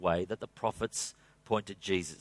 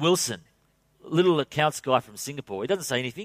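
usual speaking voice

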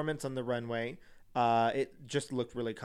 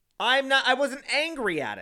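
yelling, much higher; 11 semitones higher, 6 dB louder than usual. Answering someone who asks whether they're still angry, yelling. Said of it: "You are yelling".

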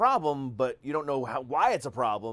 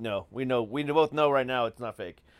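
ordinary delivery

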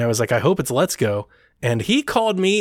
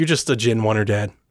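scornful, disdainful tone, lower pitched; 4 semitones lower than usual. Retelling a son's scornful remark about gaming taste: imitating his son's disdainful tone. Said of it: "he said it with such disdain and disrespect".

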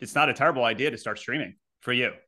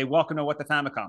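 usual speaking voice

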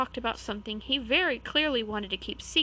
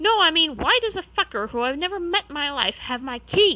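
vicious, very loud, high-pitched snapping snarl; 6 semitones higher, 8 dB louder than usual. Narrator reads an exasperated Harry interrupting Hagrid, snarling. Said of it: "snarled Harry".

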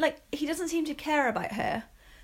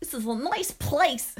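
clumsy, awful, badly done put-on woman's voice; 3 dB louder than usual. Describing a story they wrote, quoting the mum in a bad impression of the mum. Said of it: "That was an awful impression".

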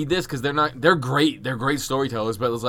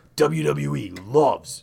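very slow put-on voice, every word stretched. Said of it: "I'm using a deep voice for him".

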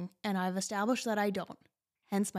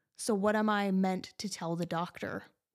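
ordinary talk

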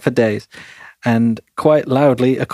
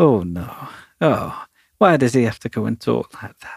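put-on disapproving, dismayed, let-down old granny voice; 3 dB quieter than usual. Imagining a reviewer listening to him: imitating Rebel Gran listening. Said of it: "I just can imagine her listening like".

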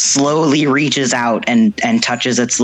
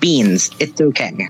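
put-on tiny, small, babyish baby voice. Narrating a scene where Beans speaks: Beans small baby voice. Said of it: "Beans says in his small baby voice".

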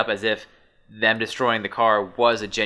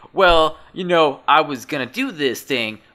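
poor, put-on New Jersey accent, raised pitch; 6 semitones higher, 5 dB louder than usual. Acting out what people who apologize might say, bad new jersey accent. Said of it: "I'm not good at that New Jersey accent".

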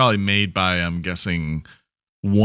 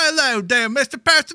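very high, put-on child's Cockney accent. Wishing a kid would add to the Victorian illusion, in a kid's Cockney accent. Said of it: "some kid to come up speaking a Cockney accent".

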